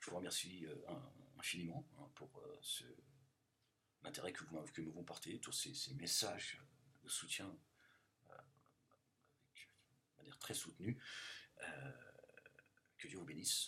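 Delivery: grave, solemn, low, hushed and very soft. Signing off to the audience, in a mock-solemn tone. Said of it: "un ton solennel".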